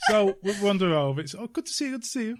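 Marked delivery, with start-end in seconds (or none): 1.3-2.4 la-di-da, posh, pitched-up voice. Retelling walking over to an acquaintance: [name] impression, getting all posh. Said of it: "That's me getting all posh".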